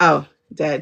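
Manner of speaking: put-on psychic voice, blunt delivery. Acting out a psychic's curt answer to a caller: imitating Sylvia Browne. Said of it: "And she'll go".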